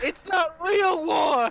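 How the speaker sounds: screaming in a character voice. Playing a character who sees a child's spine, screaming in character. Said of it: "I scream".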